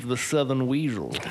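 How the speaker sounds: put-on American Southern accent. After asking someone else to try it, say it yourself in a southern accent. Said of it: "Say that in a Southern accent".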